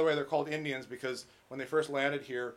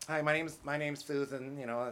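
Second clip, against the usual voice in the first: fake lisp, said quieter; 3 dB quieter than usual. A speaker mocking how some men talk, in a put-on lisp.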